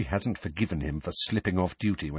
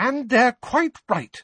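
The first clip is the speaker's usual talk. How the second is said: slow, high-pitched motherly tone. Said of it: "said Missus Weasley".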